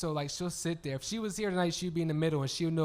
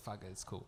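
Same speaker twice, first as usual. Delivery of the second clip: low, soft, dismissive mutter. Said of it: "I'll say it, like".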